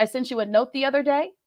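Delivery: statement intonation lifting upward on "day". Example message to Larry, a statement with upward inflection on 'day'. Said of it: "So that upward inflection".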